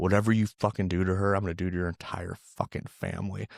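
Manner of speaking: whisper, acted out. Retelling a favourite scene where he grabs Bluto around the neck, retelling a whisper in his ear. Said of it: "whispers in his ear".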